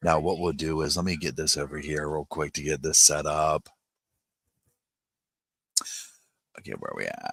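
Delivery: unshowy, low-key, toned-down everyday speech. Speaker keeps his voice down to avoid dirty looks while setting up, talking a little quiet. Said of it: "I'm kinda just talking a little bit quiet".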